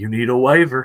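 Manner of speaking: put-on deep, thick Southern accent. Imitating the man at a medical exam, in a deep Southern accent. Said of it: "He had like a like a deep Southern accent".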